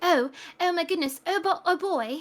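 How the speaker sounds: over-the-top, exaggerated British accent, laid on thick. Quoting how a casting told an actor to sound, in an exaggerated British accent. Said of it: "you need to sound more like".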